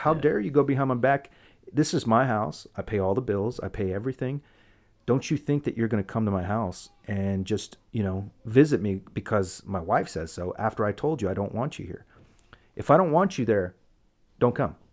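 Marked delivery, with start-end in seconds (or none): none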